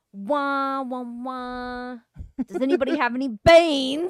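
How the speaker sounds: slow put-on English accent, "wahs" stretched. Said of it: "So they're like".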